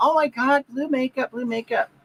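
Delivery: high-pitched, gushing, excited exclamation.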